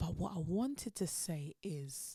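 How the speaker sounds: slow, hushed whisper.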